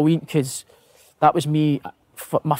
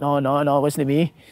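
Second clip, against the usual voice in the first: put-on Welsh accent. Retelling a teammate's denial in the changing room: imitating Robbie Savage's Welsh accent. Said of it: "Welsh accent".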